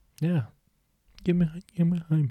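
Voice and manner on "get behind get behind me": put-on quiet voice, higher. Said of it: "Maybe Jesus was quiet".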